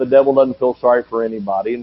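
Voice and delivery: ordinary talk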